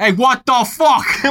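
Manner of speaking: put-on high, amorous Boston accent. Joking about what he might have said afterwards, in a Boston accent. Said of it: "in a beautiful, just romantic Boston accent".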